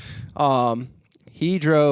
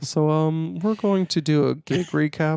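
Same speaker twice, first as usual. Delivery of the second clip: put-on monotone radio voice. Podcast host starting a gig recap, in an aggressively monotone NPR voice. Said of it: "It's almost aggressively monotone".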